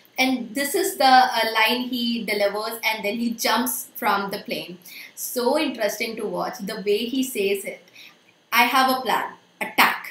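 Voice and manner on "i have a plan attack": loud, forceful stress on the word attack. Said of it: "that force he has put on this word attack".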